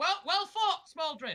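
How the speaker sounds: shouting loudly.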